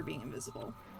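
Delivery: low, hushed ominous tone.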